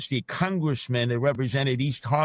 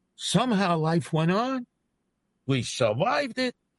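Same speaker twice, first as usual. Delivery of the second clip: slow, unhurried, put-on Yiddish accent; 6 semitones higher than usual. After recalling East Harlem's socialist congressman under FDR, speak in a put-on Yiddish accent. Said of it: "He's doing a Yiddish accent there".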